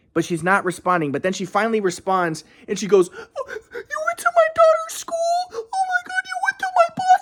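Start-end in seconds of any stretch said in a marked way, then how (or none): 3.1-7.3 put-on frantic, very high-pitched panicked freak-out. Retelling how a woman reacted to him going to her daughter's school, imitating someone freaking out. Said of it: "she freaks out like a fucking woman will freak out".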